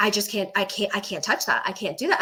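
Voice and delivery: acted, fast, short, panicky and repeated. Retelling how a title company contact refused the deal: imitating someone short and panicky. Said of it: "getting really kinda, like, short and panicky".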